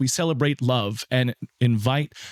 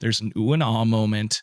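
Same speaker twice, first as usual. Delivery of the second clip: usual speaking voice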